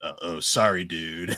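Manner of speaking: "sorry" with sarcastic edge. Describing how the character says it in the anime, mock-sarcastic. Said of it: "like he's like sarcastic".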